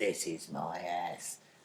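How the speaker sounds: very slow, drawn-out, growly rasp. Retelling a film scene where a girl's voice turns raspy: imitating a raspy, growly possessed voice. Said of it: "her voice goes a bit raspy, kind of a bit growly kind of sound".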